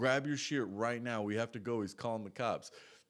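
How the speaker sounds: ordinary talk, nothing marked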